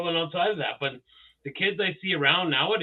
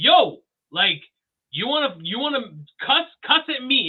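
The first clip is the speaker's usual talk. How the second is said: acted firm raised voice, climbing higher, short of blowup; 7 semitones higher, 5 dB louder than usual. Retelling a video of a father daring his kid to cuss: imitating a raised voice. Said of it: "his ra-, voice was raised".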